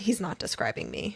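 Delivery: normal talking voice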